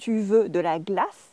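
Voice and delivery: rising question tune on tu veux de la glace. Explaining french to listeners, demonstrating a question with rising question intonation. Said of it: "and the voice goes up".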